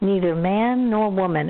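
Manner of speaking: ordinary talk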